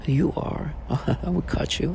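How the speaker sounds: very quiet, slow, deliberate menacing tone. Speaker mocks a grown man trying to sound threatening: mocking a man's menacing voice. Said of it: "try to use his menacing voice".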